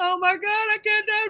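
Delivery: high, loud, panicked sobbing outburst.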